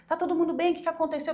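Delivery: put-on very high shout, projected far. Retelling a traffic officer calling to the people behind: imitating someone shouting. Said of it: "Aí ele já gritou pro pessoal de trás".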